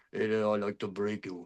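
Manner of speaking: put-on thick Romanian accent, low, hushed and very quiet. Mocking background actors playing Americans, in a thick Romanian accent. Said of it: "have a very thick Romanian accent".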